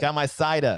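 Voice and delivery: put-on New York–accented speech. Joking about having a drink: New York accent. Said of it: "that was a New York accent".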